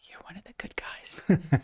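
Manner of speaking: hushed, soft, voiceless confiding whisper.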